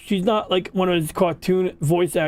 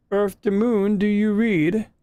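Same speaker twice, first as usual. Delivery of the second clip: flat, level computer announcement voice; 3 semitones higher than usual. Speaker doing the computer voice from Star Trek: Star Trek computer voice. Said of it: "doing the computer voice from Star Trek".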